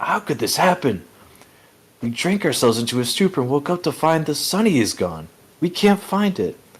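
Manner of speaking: high, frantic, panicked disbelief. Voicing giants who woke to find the ship gone: freaking out. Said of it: "all kind of freaking out".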